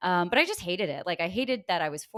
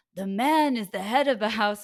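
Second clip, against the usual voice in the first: put-on Israeli New York accent; 3 semitones higher, 4 dB louder than usual. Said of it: "doing like a weird Israeli New York".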